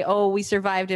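ordinary delivery

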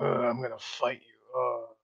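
rough, low, gruff, gravelly tough-guy voice. Describing a game character, showing the voice he doesn't have: gruff, gravelly man voice. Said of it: "gruff, gravelly man".

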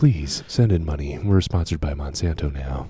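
calm public radio announcer delivery. Podcast host switching voices for the rest of the show; NPR voice. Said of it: "the NPR voice".

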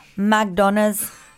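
attempted put-on Nigerian accent. Trying out an accent hack from a listener: attempted Nigerian accent. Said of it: "sounds like you're saying McDonald's in a Nigerian accent".

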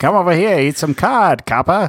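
put-on tough-talking, old-time 1920s mobster voice. Friends take turns doing mobster voices; 1920s mobster voice. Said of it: "Pretty good".

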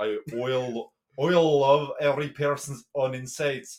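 very loud, very slow, botched Scottish accent attempt. Repeating a phrase the other speaker suggested, in an attempted Scottish accent. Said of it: "it's meant to sound like Scottish".

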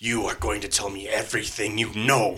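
devilish, fiend-like, inhuman demonic voice. Game narrator voicing the lute player's line, in an inhumanly deep devilish voice. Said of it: "inhumanly deep, almost devilish-sounding voice".

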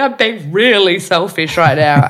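tearful crying, words pushed out through tears. Retelling a therapy session, quoting own past words: retelling own crying words. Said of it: "I literally was crying saying".

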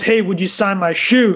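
usual speaking voice

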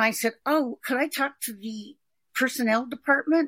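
ordinary talk

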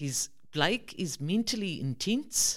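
put-on high South African accent. Speaker quoting his guide dog trainer speaking to him, Libby's South African accent. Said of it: "in her South African accent".

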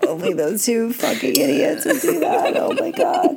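cracking up, pitch rising. Telling about two people on a trip lifting a sliding door, laughing really hard. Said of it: "I'm laughing really hard right now".

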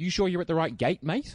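patronizing, condescending, talking-down tone. Retelling a security guard's remark at the gate: mock-condescending. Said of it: "really condescendingly".

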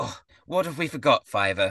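snide, scornful, contemptuous sneering tone. Voicing a character whose smile turns to a sneer: sneering. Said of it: "smile suddenly... goes to a, a sneer".

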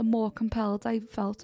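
ordinary delivery

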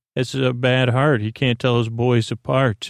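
ordinary talk

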